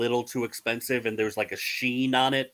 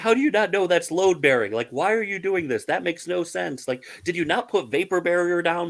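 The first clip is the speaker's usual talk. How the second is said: mock high, raised, fan-style yelling; 6 semitones higher, 4 dB louder than usual. Retelling how they yell at home renovation shows on TV: imitating yelling at the TV. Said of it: "we are yelling at them".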